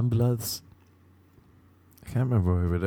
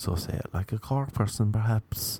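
ordinary talk

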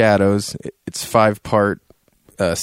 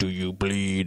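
hushed, soft voice through a modulator; 2 semitones lower, 10 dB quieter than usual. Describing the game's hero going into action, doing his Batman voice-modulator voice. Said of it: "he puts on the voice modulator".

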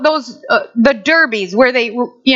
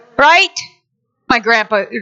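plain

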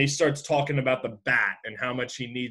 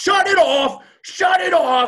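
high, loud cartoon-character yell. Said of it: "starting with classic Taz".

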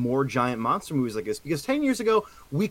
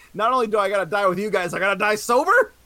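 hollered outburst, yelled with raised pitch; 7 semitones higher, 3 dB louder than usual. Retelling a movie scene where a character yells at another: imitating someone yelling. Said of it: "When he's yelling at Russell".

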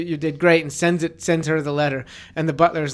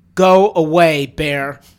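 loud, very stern, no-nonsense delivery; 8 dB louder than usual. Showing how to tell a bear to leave, the speaker uses a very stern voice. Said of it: "in a very stern voice".

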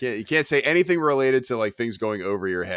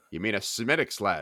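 put-on sassy voice, quieter; 4 dB quieter than usual. Retelling what the bartender said after a drink order: imitating a sassy bartender. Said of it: "the sass on that man".

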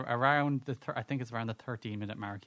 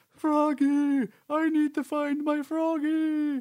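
dopey, dumb-sounding voice, very high and loud; 8 dB louder than usual. Describing a game character who talks like the stupidest character, Big the Cat dim-witted voice. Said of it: "he talks like he's the stupidest character".

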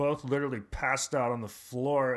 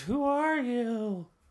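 put-on old woman voice, much higher, slower; 11 semitones higher than usual. Retelling what a woman asked when the speaker picked her up, old woman voice. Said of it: "It sounds like an old woman".

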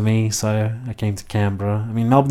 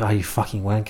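muttered under the breath; 4 dB quieter than usual. Acting out a remark made to someone walking by, muttered under one's breath. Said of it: "say under your breath".

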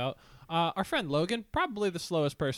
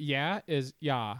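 slow, drawn-out California ah vowel for A in "yeah". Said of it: "Can you do, like, an example for the people".

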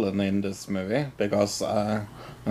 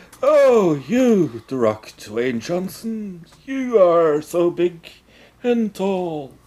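mock elderly wizard voice; 8 semitones higher than usual. Imitating a movie villain who comically sounded like Dumbledore. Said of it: "It sounded like".

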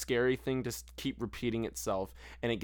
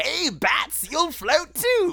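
very high, very loud, wild, swooping, sing-song clown voice; 10 dB louder than usual. Talking about the clown in the movies, the speaker does a clown voice. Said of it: "Every time you do that fucking voice".

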